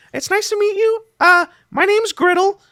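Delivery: high-pitched goblin character voice. Voicing a goblin who greets the party: voicing a goblin. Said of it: "goblin kind of, like, nods and greets you all, and he says".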